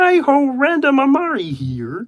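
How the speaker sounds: stretched out, high and sing-song. Asked to say his own name, he does it in Kermit voice. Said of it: "say my name in Kermit voice".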